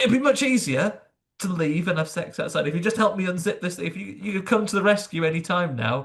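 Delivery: high, fed-up, irritated grumbling. Retelling a scene where Lucifer asks for help unzipping: imitating an annoyed Lucifer. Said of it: "I love how annoyed he is".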